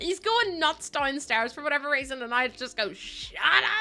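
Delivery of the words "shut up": shrill, nagging fishwife holler. Retelling snapping at someone going nuts downstairs, yelling like a fishwife. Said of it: "I sound like a fishwife".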